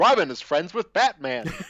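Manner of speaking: loud game-show announcer voice, like a host. Discussing the Super Friends cartoon, speaker acts out Superman: Superman game show announcer voice. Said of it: "was given a game show host voice or like a game show announcer voice".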